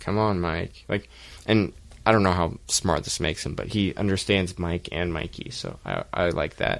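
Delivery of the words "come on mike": put-on stern voice, slower pace. Speaker telling mike off after he growls at them, put-on stern voice. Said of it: "I'm doing a stern voice".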